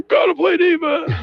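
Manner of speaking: very high, rasping coach voice. Imitating the women's basketball coach heard from the sidelines, raspy coach voice. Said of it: "it's kind of a almost a raspy voice".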